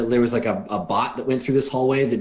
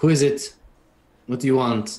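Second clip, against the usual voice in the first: tired, weary, worn-out man's voice; 2 semitones higher than usual. A man answers someone at his door, in a tired-sounding voice. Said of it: "tired sounding voice says".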